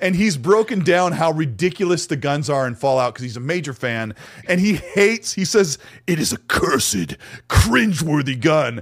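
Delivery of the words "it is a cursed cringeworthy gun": really low, heavy, deep voice. Quoting a YouTuber who calls a game gun cursed: imitating Ya Boy Brandy Boy's low voice. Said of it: "he's got a really low voice like this".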